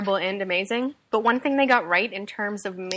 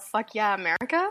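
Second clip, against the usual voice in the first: plain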